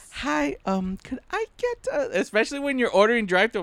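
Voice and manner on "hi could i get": polite service voice, higher, quieter and slower. Teasing someone about how they order at the drive-through, in customer service voice. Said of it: "the customer service voice".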